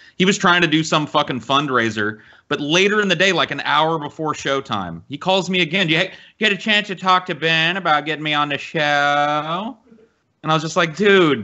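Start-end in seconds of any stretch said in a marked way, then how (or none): 5.9-9.8 meowy, drawn-out cat-like voice. Retelling what Vadim said when he called again, in a cat voice. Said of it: "You use the cat voice when you talk like Vadim".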